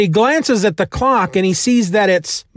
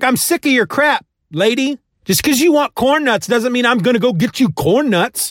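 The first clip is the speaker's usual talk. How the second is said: mock, mildly sassy, snippy voice with attitude; 3 semitones higher than usual. Retelling a film scene where a gang member refuses an errand: imitating a character giving attitude. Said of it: "he gets a little attitude".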